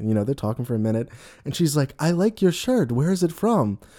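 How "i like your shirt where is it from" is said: sweet, lovely voice, pitched a bit higher. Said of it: "being all lovely".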